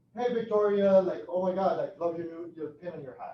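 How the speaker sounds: loud, high, gushing, friendly voice.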